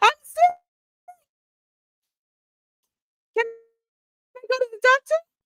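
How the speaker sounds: very high, slow, drawn-out put-on voice. Reenacting what witness F said after coming back: imitating witness F. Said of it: "Let me do a reenactment".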